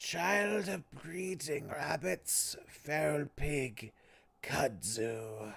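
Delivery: halting, rasping creature voice, soft and slow. A creature addresses you across a wall, in a halting, rasping voice. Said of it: "address you in a halting, rasping voice".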